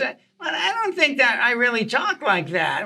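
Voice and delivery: high, swooping, swinging sing-song comic delivery. Retelling a club story, imitating Jay Leno: Jay Leno voice. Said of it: "He talks like this".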